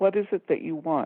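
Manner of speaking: put-on very quiet, hushed voice. Retelling what the woman behind in line asked: imitating a very quiet voice. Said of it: "very quietly, not so anybody else would hear".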